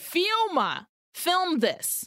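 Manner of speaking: play-acted, high, shouted yelling. Retelling a politician's order to film: imitating someone yelling. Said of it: "he yells at the guy".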